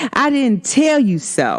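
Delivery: ordinary delivery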